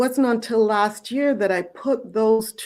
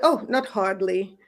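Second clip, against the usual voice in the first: put-on British accent. Retelling what a woman said when she looked at her: British accent. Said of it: "in her British accent".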